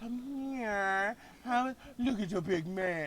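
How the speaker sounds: soft, slow, sweet, cutesy little voice. Showing how to win men over, in a sweet little voice. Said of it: "give a little sweet little voice".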